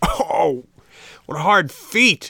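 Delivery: shrill, very slow, swooping, booming, drawn-out roar. Kicked on the shins by a puppet under the table, a boy roars. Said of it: "roared the boy".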